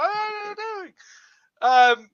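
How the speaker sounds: very high, drawn-out delivery. Imitating how a player sounded reacting: impression of Son. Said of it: "that's what he sounded like when he was like".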